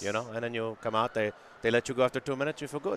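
put-on French-Canadian accent. Describing the penalty box from the movie Slapshot, in a French-Canadian accent. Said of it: "I was trying to do a French-Canadian accent".

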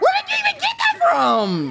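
high, shocked yell.

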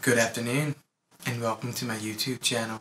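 put-on UK accent, vaguely Irish. Opening a video as a joke in a fake british or irish accent. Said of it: "Imagine if my voice really sounded like that".

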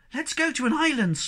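very high, eager, begging, pleading tone. On a boat trip, a character asks to go to an island, begging. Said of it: "begged the Snork Maiden".

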